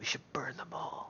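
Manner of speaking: hushed, under-the-breath whispered aside. Whispering a suggestion to the party in character: whispering under breath. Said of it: "I whisper to the party under my breath".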